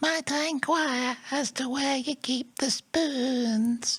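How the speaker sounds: very high camp Northern England voice, stretched ending. Showing off how good they are at voices, a camp Northern Salad Fingers voice. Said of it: "slightly more camp and has, taken on a Northern England accent".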